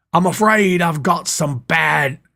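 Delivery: slow, deliberate promo voice. Attempting the catchphrase for a promo idea: Bad News Barrett impression. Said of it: "I can't get my voice down".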